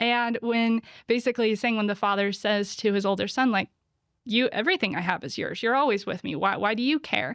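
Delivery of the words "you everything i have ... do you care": put-on sarcastic voice. Retelling a parable, the father answering his older son: imitating a sarcastic father. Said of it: "He's being sarcastic".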